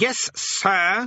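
short, sharp, curt, high snap. The Demon King answers a distant voice through a speaking tube, snapping. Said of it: "snapped the king".

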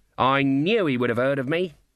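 plain reading voice

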